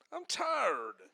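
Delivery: put-on whine, very high-pitched and soft. During a sermon, the preacher acts out a tired marcher's complaint; mock-whiny complaining. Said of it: "Say it more whiny".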